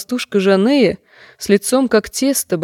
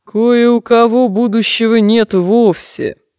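menacing, frightening, low mumbling mutter; 4 dB louder than usual. A woman answers two girls begging to hear their future, in a scary low mumble. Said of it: "страшным низким голосом пробубнила".

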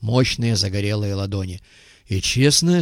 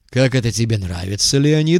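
ordinary delivery

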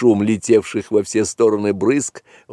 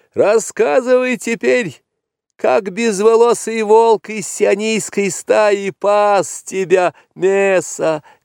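very high-pitched yell through laughter; 11 semitones higher than usual. After pricking the buffalo and laughing, the boy calls out to it, shouting. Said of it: "крикнул он".

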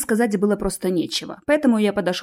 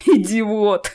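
laughing out the word; 3 dB louder than usual. Narrator reads Ches answering the narrator's question, laughing. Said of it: "рассмеялся Чес".

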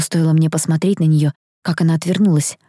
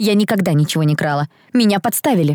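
ordinary delivery

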